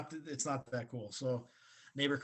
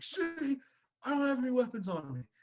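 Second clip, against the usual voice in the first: screaming, shrieking yell at a very high pitch; 12 semitones higher, 4 dB louder than usual. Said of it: "just starts screaming and yelling".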